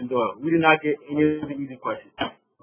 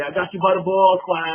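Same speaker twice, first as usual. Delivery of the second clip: strong put-on Boston accent; 4 semitones higher, 4 dB louder than usual. Retelling what a math teacher said after a bad test: strong Boston accent. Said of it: "with this strong Bostonian accent".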